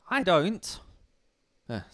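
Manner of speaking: voice breaking, cracking up high on the words. Answering someone who asks why you say something about women, with a voice crack. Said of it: "sorry for the voice crack there".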